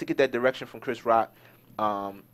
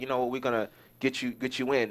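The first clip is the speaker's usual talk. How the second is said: ordinary delivery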